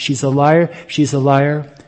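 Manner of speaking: normal talking voice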